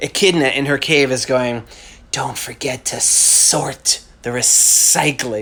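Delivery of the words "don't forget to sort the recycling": slow, hissing snake voice, each s hissed. Speaker reads a drawing's caption aloud as Echidna in her cave, sibilant voice. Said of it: "I have to get the proper sibilance for this".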